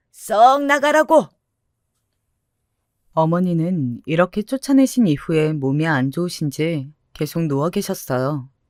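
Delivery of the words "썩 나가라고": loud, slow, furious shout. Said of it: "마구 화를 내시면서 쫓아내셨답니다".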